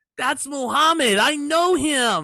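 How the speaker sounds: high, innocent, naive voice. Describing a wrestling entrance to a co-host, imitating innocent Eugene. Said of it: "poor innocent Eugene does not know".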